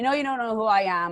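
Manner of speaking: mock drunk, slurred speech. Retelling a phone call from a woman who wanted attention, voicing her as drunk, imitating a slurred drunk caller. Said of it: "She's drunk".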